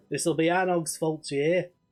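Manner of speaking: put-on north of England accent. Voicing the dismayed dwarf from the north of england, northern english accent. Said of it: "is from the north of England".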